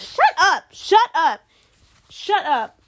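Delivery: loud, high-pitched yelling.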